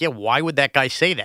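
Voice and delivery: ordinary delivery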